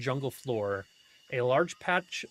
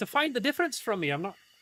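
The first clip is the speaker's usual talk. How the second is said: put-on sudden, unplanned slide into Irish accent; 9 semitones higher than usual. Answering a player's question about crystals and rocks, slipping into an Irish accent. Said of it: "why did I go, uh, Irish there?".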